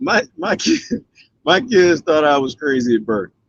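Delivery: giggling, can't stop laughing while talking. Asked what their children think of this: laughing while talking. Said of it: "I can't stop laughing".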